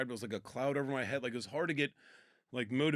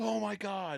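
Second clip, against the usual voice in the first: acted, sudden, high-pitched pained yell; 8 semitones higher than usual. Telling how he hurt his foot in the basement, retelling a yell of pain. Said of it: "And I'm like yelling".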